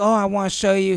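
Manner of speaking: acted nonchalant, cool tone. Retelling how a father lured a car salesman away: imitating someone playing it cool. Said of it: "He played it so cool".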